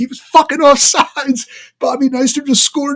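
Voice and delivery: screaming in tearful outrage. Recalling being thirteen and screaming while he cut the grass, retelling own scream. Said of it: "and I'm screaming".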